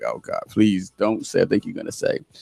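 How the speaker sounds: put-on weeping, crying, tearful pleading tone. Retelling a sister's phone call the day after New Year's: imitating someone crying. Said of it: "she starts crying like".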